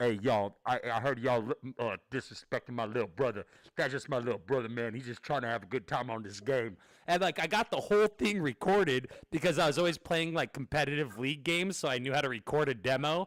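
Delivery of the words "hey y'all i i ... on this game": deep, big tough-guy voice on the mic.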